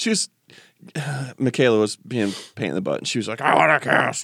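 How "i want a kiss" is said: grouchy, cranky, put-out tone. Retelling how Michaela asked for a kiss: imitating Michaela being grumpy.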